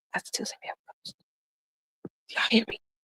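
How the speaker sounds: whispered. Speaker insists to listeners there is a ghost in the hallway, whispering. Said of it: "I'm whispering".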